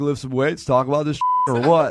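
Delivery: dudely gym-bro voice.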